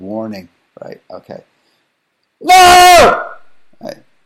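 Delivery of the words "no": very loud, high, stretched-out shrieked no. Demonstrating on the kitty after a warning, screamed really loud. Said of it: "Warning, I'm going to get really loud".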